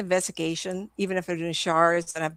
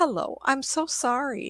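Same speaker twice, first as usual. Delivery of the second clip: pleasant smiling voice, high and very slow; 7 semitones higher than usual. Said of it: "always smile".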